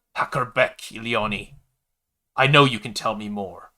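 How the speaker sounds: loud, forceful, hissed. Narrator reading a woman's line in a story, hissing. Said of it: "She hissed".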